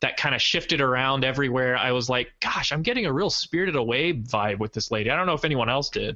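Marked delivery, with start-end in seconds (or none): none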